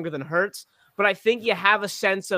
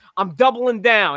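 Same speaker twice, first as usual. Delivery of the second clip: louder put-on West New York accent; 3 semitones higher, 5 dB louder than usual. Acting out him smacking the table at the press conference, in Nick Sirianni's West New York accent. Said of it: "in his West New York accent".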